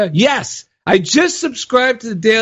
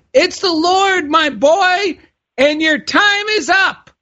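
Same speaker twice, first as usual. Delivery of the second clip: boy's loud, high, slow put-on grown-up voice; 8 semitones higher than usual. Telling a joke, the speaker voices a boy repeating what he said: loudest grown-up voice. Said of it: "in my loudest grown-up voice".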